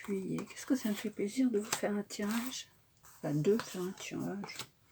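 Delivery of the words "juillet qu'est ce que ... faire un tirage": quiet, small, soft little voice. Counting off months while drawing cards for viewers: small quiet voice. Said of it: "à faire ma petite voix".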